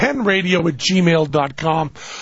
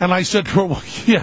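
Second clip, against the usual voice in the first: plain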